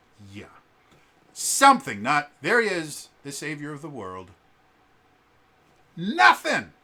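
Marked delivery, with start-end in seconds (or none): 2.4-4.2 put-on flat, emotionless line reading. Contrasting with the better version, imitating the show's emotionless delivery. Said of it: "very emotionless".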